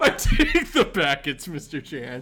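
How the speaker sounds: laughing while talking. Answering a question, unable to keep a straight face: laughing while talking. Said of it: "I can't keep a straight face".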